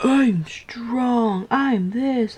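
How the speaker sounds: high, boastful tiger voice. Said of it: "the tiger's like".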